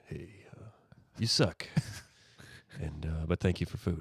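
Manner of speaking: very soft, barely audible, indifferent cat voice. Asked what the cat's voice is, the speaker demonstrates it: indifferent Gabriel Church Kitten voice. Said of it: "He's a little indifferent".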